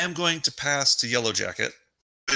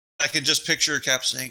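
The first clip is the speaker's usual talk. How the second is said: plain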